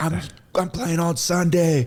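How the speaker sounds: put-on full-volume shout. Recalling yelling back at people yelling about him: retelling yelling at full volume. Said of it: "yelling back like on the top of my lungs".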